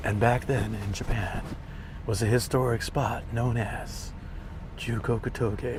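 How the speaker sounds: put-on slow, old-style video voiceover narrator voice. Comparing narration styles, speaker demonstrates the voice from older videos: old video narration voice. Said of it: "I used to narrate in a voice like".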